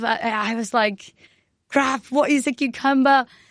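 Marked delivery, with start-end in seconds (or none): 1.7-3.2 acted, put-on screaming. Retelling being alone in the fridge after the chef's demand, retelling a scream. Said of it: "I was like screaming in the fridge".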